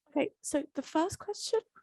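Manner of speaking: soft, jittery, uneasy and nervous voice. Starting to answer audience questions, about to read the first one: nervous. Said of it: "You sound very nervous".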